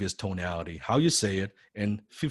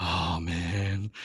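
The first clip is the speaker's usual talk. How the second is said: mock depressed sighing, lower and quieter; 4 semitones lower, 5 dB quieter than usual. Imitating trainees who overdo the sigh on the phone: imitating an overdone sigh. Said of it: "feels like you're fucking depressed".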